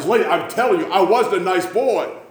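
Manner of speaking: put-on high, insistent, protesting yell. Retelling a man arguing with a lady who insists he was nice: retelling a man's yell. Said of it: "he's yelling".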